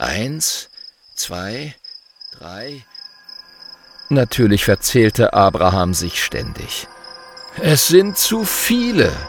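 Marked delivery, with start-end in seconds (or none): 7.6-9.1 groaning, much higher, slower. Abraham gives up counting the stars, groaning. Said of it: "stöhnte er schließlich".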